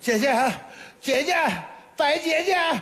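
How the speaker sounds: desperate, pleading, rising called-out voice.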